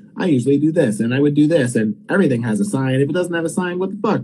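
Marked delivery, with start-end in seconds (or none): none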